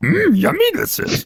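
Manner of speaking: put-on character voice, pitched way up, very high. Doing an impression after friends ask for it: Yoda voice. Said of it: "his Yoda impression's the best one".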